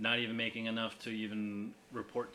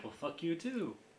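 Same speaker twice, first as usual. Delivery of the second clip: high, sweetly polite, nice, friendly tone; 8 semitones higher than usual. Retelling how Canada answered the pipeline insult: imitating Canada's nice tone. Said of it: "In their nice way, nice tone of voice".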